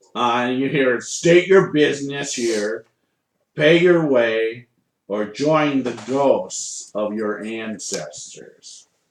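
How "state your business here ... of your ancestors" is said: calling hobgoblin-like monster creature voice. Voicing an unseen figure in the woods who challenges the party: hobgoblin voice. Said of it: "you think it's a, a hobgoblin voice".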